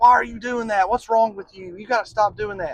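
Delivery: loud, aggressive tone. Illustrating how someone goes at their spouse in an argument, loud and aggressive. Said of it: "kind of loud and aggressive".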